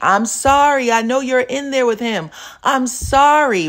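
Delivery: put-on man's high screaming voice, begging. Retelling a video of a guy at a window: imitating a man screaming. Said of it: "there's a guy who is screaming at the window".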